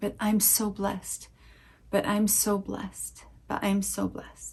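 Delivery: put-on tearful voice. Retelling what a hugging woman said in the ear, imitating her crying. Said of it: "she's saying in my ear while she's crying".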